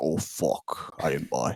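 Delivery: put-on British accent, breathy, hushed, slow, drawn out. Speaker retells a teammate's reaction after his call in overtime, British accent. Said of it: "in his like British accent".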